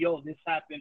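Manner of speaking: normal talking voice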